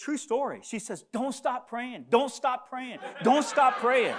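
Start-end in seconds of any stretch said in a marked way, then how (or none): 1.1-4.1 insistent, urgent, repeated shouting with raised voice. Retelling what the lady behind the speaker shouted at him, retelling her shouting. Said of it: "she starts shouting to me".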